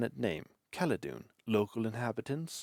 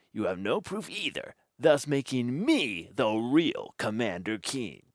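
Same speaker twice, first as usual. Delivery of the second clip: rude, mocking, mimicking put-on voice; 4 dB louder than usual. Narrator reads the creature's retort to the hero, rudely mimicking. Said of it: "The creature mimics rudely".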